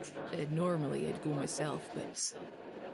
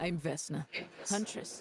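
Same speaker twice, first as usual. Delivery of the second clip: firm, stern, severe, unbending delivery; 2 semitones higher than usual. A huntress introduces herself to a stranger who asked who she is, in a stern voice. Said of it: "she said that with a stern voice".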